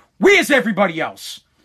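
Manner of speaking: put-on angry father voice. Retelling how the father reacted on the speaker getting home alone, imitating angry dad. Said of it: "He got all mad".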